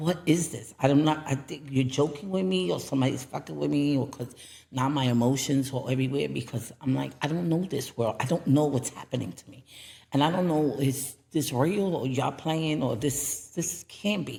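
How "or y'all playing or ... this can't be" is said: ordinary talk, nothing marked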